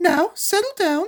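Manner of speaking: very high, sugary-sweet tone. Reading a story aloud, the narrator voices Miss Nelson speaking to an unruly class, sweetly. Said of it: "said Miss Nelson in a sweet voice".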